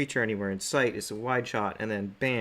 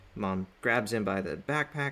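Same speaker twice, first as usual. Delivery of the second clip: plain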